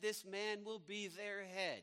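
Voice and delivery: the word head stressed, said slow. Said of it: "I emphasize that word head".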